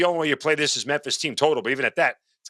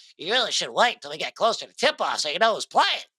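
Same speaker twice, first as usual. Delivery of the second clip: put-on nerdy voice; 3 semitones higher than usual. Speaker mocks someone giving the group advice, in a mocking nerd voice. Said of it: "nerd voice".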